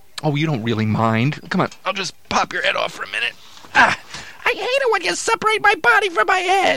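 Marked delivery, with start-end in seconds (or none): 3.8-6.8 very high, griping, complaining ventriloquist's dummy voice. In a ventriloquist act, the dummy objects to having its head popped off: ventriloquist dummy voice. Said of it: "Well, then you shouldn't have been born a dummy".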